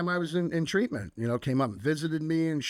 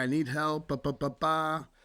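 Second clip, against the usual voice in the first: mock baby-like crying and sobbing, slower. Retelling raising his hand at his first men's meeting, imitating crying like a baby. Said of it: "crying like a little baby".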